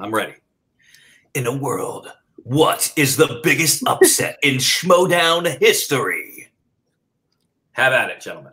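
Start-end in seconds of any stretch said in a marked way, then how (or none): 1.3-6.5 slow, high, epic movie-trailer announcer voice-over. Opening a show segment with a question for the guests: movie trailer announcer voice. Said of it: "I got my announcer voice, trailer voice ready".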